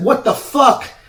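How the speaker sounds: cried out, pitched way up. Retelling a choke that was not released after tapping, he re-enacts yelling. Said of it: "I'm yelling like".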